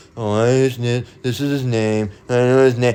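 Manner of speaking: put-on grudging, half-hearted, reluctant tone. Acting out someone naming the Lord unwillingly: imitating a begrudging speaker. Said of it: "You're just gonna say his name begrudgingly".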